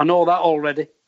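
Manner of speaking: usual speaking voice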